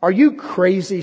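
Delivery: loud, high, contemptuous, scornful sneer. Narrator voices a man leaning on a telephone pole answering the ragman, sneering. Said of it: "sneered the other".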